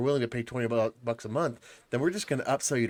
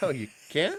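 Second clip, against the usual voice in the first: high-pitched, furious, challenging, enraged tone; 5 semitones higher than usual. Retelling a reply to the voice assistant: imitating own enraged retort. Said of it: "I get enraged".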